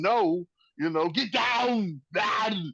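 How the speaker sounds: slow, drawn-out delivery, each word stretched. Imagining the star facing a drug lord who wants a tortilla spot, do an Arnold Schwarzenegger impression. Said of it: "impressions now, man. can we get more one more get down?".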